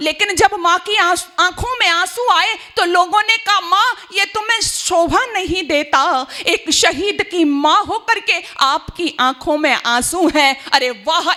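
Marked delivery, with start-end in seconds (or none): none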